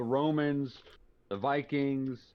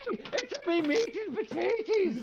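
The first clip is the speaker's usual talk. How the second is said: terrible put-on Irish accent, very high pitch. After a co-host's terrible irish accent, he tries his own: bad irish accent. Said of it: "There it is".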